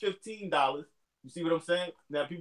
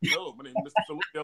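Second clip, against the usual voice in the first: put-on formal, proper telephone speaking voice. Showing how he answers the phone in his speaking voice: put-on proper phone voice. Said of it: "I got a speaking voice and all that".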